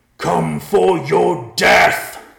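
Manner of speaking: full-force roar, very loud, high, raw, rough. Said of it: "roared as loud as he ever had".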